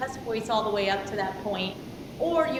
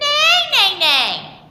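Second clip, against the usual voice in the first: very loud, shrill voice, forward in the nose; 13 semitones higher, 12 dB louder than usual. Demonstrating a vocal exercise for the student to repeat, nasal placement. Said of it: "Put it right in the nose".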